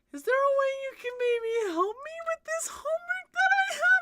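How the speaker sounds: very high, loud, helium-sucked voice. Acting out prompt number seven, voice getting higher. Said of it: "her voice gets higher".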